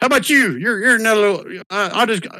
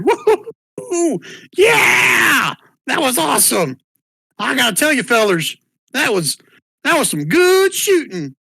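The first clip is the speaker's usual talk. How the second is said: delighted, gleeful, laughing, cackling whoop; 4 semitones higher than usual. Voicing a figure from the back room after the fight: gleeful laughing voice. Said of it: "little gleeful laugh come from the back room".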